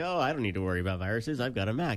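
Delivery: plain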